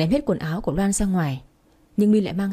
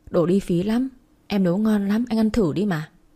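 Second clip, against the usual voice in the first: plain reading voice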